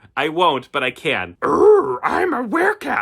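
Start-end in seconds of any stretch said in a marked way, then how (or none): 1.4-3.1 put-on very high, gravelly little old sage voice. Speaker redoes the werecat's line after a bad first try, as a Yoda impression. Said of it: "that's better".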